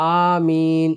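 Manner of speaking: spoken right out loud, clearly and loudly. Showing how not to say aameen behind the imam: loud 'aameen'. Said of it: "ऐसे नहीं पढ़ना है आमीन, जोर से नहीं पढ़ना है".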